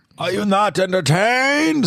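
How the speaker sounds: very high, loud, strange villain voice belted out. Friends discuss a Roman movie character's British accent: Bane-like voice. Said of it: "like he sounds like Bane or something".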